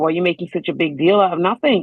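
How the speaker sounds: irritated, angry, exasperated tone. Retelling what the other person said in their fights: imitating someone angry. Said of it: "He got angry".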